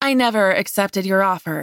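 ordinary delivery

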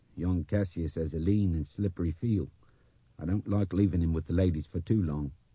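ordinary delivery

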